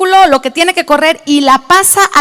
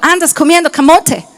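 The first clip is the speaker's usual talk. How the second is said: put-on Spanish with American accent. Retelling what the children say, imitating an american accent. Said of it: "con acento gringo".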